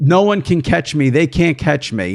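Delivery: ordinary delivery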